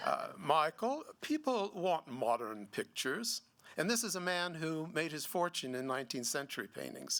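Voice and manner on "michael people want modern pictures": fake English accent with swooping pitch. Quoting a man who made his fortune in paintings: put-on english accent. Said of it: "this is my English accent".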